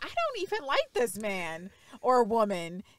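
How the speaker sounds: usual speaking voice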